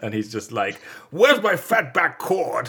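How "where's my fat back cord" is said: very high, loud, swooping, rude delivery.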